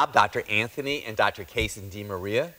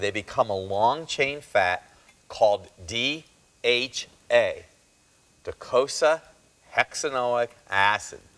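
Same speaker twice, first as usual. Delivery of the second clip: very slow, drawn-out, deliberate delivery. Speaker warns listeners, then says the next part very slowly. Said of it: "I'm going to say this really slowly".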